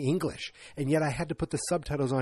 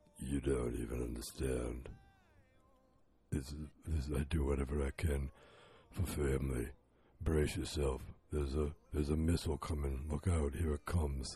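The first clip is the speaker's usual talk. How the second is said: put-on deep, low, creaky vocal-fry voice; 12 semitones lower, 9 dB quieter than usual. Talking about a movie, imitating how he talks in it; deep vocal-fry impression. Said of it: "It's so deep, and it's like vocal fry".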